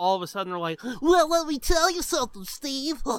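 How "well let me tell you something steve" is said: put-on stuffy voice, pitched up.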